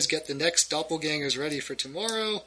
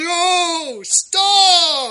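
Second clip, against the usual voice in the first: very high, very loud, drawn-out shrill scream; 14 semitones higher, 10 dB louder than usual. Voicing a circus owner who screams to stop the others: screaming. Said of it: "And Bombax screams".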